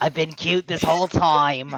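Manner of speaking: washed-up New York star voice. Voicing a pet cat as a washed-up New York star: washed-up New York star voice. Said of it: "the voice of, like, uh, a washed up s-, New York star".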